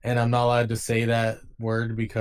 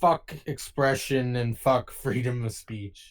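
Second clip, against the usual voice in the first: put-on, slow, sarcastic proclaiming tone. Making a mock declaration to the others: sarcastic, put-on declaration. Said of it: "I'm just saying it sarcastically".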